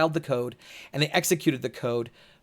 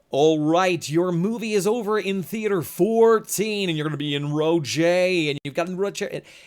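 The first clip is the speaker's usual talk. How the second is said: hammed-up radio announcer voice; 4 semitones higher, 3 dB louder than usual. Mocking how a man with a signature radio voice always talks: hammy radio voice. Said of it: "That's how he talks every time".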